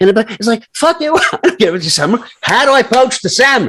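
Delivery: very high yelling. Venting mid-conversation to the other speaker: raised voice. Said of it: "I'm raising my voice".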